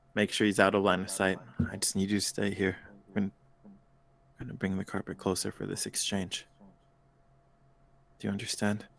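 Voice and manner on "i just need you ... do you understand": hushed whisper under the breath. Guiding someone out of sight before an exchange, the character speaks whispering. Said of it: "And I'm whispering".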